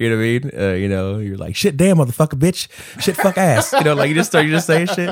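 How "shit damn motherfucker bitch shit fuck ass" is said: put-on high childish little-kid voice. Showing the way a kid cusses: imitating a kid cussing. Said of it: "the way a kid cusses".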